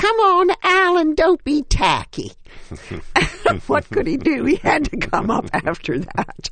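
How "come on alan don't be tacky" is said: put-on loud, high-pitched Texas accent. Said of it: "in her best Texas voice".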